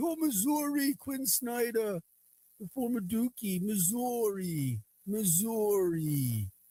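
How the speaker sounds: excited announcer voice, "Missouri" high, slow and drawn out. Showing how national broadcasters would say Missouri, do a Dickie V. impression, East Coast Missouri. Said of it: "Missouri is the East Coast way of saying it".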